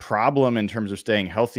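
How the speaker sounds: usual speaking voice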